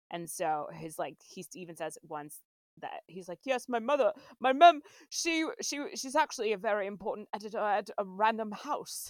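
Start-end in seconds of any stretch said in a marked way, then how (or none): 3.4-9.1 bad put-on British accent impression. Speaker quotes Jude Law's character from the film, as a Jude Law impression. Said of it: "Impression, by the way".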